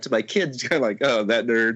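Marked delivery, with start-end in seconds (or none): 1.0-1.8 sarcastic, snarky, mocking put-down tone. A father recounts how he talked to his kids afterwards; retelling own snarky remark. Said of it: "being that kind of snarky guy".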